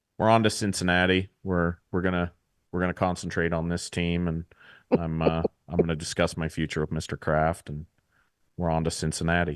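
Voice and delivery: very low, dead flat monotone. Imitating a coach dodging questions: Bill Belichick impression. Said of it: "Bill Belichick's the easiest guy to impersonate ever".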